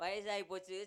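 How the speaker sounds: ordinary delivery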